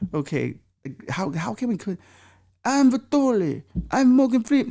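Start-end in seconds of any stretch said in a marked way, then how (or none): 2.6-4.7 very high, botched put-on Russian accent. Trying to add a Russian accent to a voice: Russian Morgan Freeman impression. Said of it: "See, it doesn't work".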